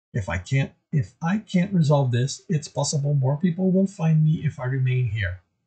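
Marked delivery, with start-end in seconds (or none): none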